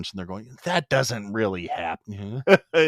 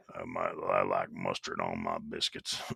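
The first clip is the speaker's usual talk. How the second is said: put-on extra-bass voice, lower and quieter; 9 dB quieter than usual.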